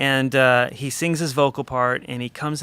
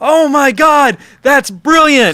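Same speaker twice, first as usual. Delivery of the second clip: thrilled put-on Yorkshire accent, very high and very loud; 13 semitones higher, 12 dB louder than usual. Retelling a man's reaction to a guitarist's funk playing, in a Yorkshire accent. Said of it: "in his Yorkshire accent or whatever".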